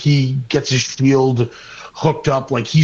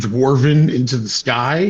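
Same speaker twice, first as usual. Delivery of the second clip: plain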